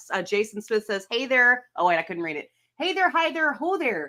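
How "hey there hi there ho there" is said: put-on high Minnesota accent throughout. Reading out what someone wrote to the show, in a Minnesota accent. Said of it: "you read that in a Minnesota accent".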